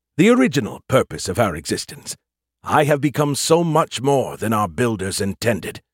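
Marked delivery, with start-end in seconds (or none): none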